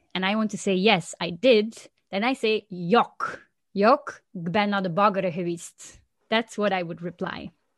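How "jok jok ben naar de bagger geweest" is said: local Dutch dialect speech. Demonstrating a reply to a bakery question, imitating the dialect. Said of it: "my best imitation of the dialect".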